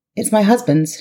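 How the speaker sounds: offhand, unconcerned, indifferent, uninterested tone. A woman in a car answers a man's question about it: indifferent. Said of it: "she replied indifferently".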